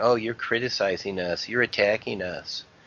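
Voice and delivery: ordinary delivery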